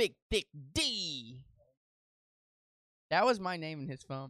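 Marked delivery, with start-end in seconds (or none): 0.0-1.4 voice projected across distance. Retelling how a coworker called out a nickname: imitating a coworker. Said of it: "But he would go".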